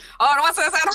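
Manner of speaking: very loud, high-pitched horse race announcer call. Retelling what another player said: horse race announcer voice. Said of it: "sounded like a horse race announcer".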